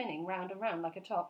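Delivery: plain reading voice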